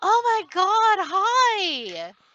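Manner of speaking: very high, very loud, shrill, excited gushing. Describing how a woman greets you when she notices you: way too loud. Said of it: "way too loudly says".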